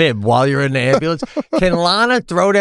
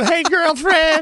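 high, exaggerated put-on Southern woman voice; 12 semitones higher than usual. A show host jokes about what it takes to get viewers, southern woman voice. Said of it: "like I'm a Southern woman".

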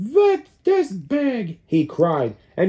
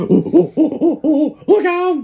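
whooped cry, pitched up; 9 semitones higher, 4 dB louder than usual. Reading a children's story, the chimpanzee warns the other animals: whooping. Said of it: "Whooped the chimpanzee".

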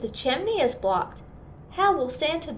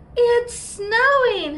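high, shrill, loud, excited gasping cry; 11 semitones higher, 6 dB louder than usual. Narrating, a bear cub peeks out the window at bedtime: gasped. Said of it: "gasped Button".

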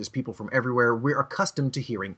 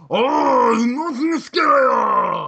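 shrill, very high put-on Chinese accent, long "oh"; 13 semitones higher, 9 dB louder than usual. Showing how a Chinese accent sounds: mock Chinese accent. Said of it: "you know how Chinese sound".

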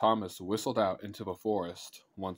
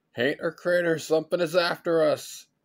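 high, loud, frightened shouting cry; 8 semitones higher, 7 dB louder than usual. Hearing noises in the brush, Robbie cries out to the other boys. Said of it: "Robbie cried".

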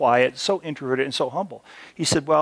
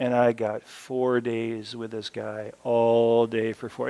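put-on boring, dull monotone; 3 semitones lower than usual. Complaining about four days with this guy, mimicking him: imitating Curtis's flat monotone. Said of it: "he pretty much talked like this".

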